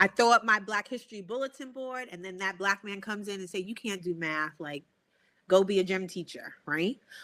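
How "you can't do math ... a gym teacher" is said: normal talking voice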